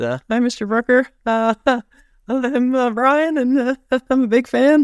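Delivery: put-on squeaky kid voice. Retelling greeting someone he was a big fan of, as a shy kid: squeaky voice. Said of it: "in my squeaky voice".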